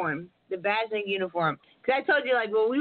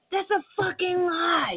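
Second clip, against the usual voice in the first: put-on very high, very slow, drawn-out scream; 9 semitones higher than usual. Retelling an outburst at a judge in the courtroom: imitating own screaming. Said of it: "But I was screaming like".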